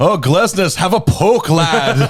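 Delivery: put-on English accent, drawn out. Speaker retelling what Richie said during a game watched at his place, imitating Richie's English accent. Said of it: "of course he has the accent, he goes".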